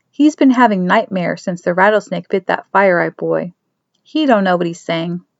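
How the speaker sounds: plain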